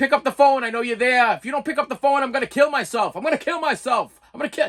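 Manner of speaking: mock urgent ranting, yelling. Retelling a relative's answering machine message: imitating someone yelling. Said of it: "he's yelling into the, into the answer machine".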